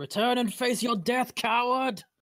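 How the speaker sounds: very high, loud shouting. Shouting in character after fleeing enemies: shouting a challenge in character. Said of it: "I shout".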